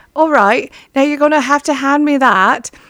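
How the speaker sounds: put-on British accent. Retelling own words while helping a niece tie a quilt: put-on british accent. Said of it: "talk with a Briti-, British accent".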